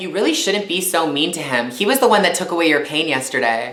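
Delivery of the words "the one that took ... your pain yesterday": ordinary talk, nothing marked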